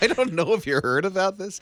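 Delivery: laughing through the words. Radio morning show host starting a story for listeners, laughing while talking. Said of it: "Sorry, I'm laughing".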